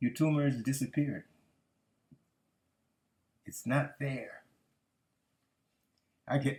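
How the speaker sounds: a little emotional, voice choking up. Recalling the doctor's news after a brain scan, a little emotional. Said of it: "I get a little emotional just remembering this".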